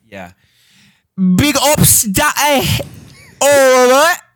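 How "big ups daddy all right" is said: high, loud, hammed-up mock British accent. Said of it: "I can't tell what accent you're going for".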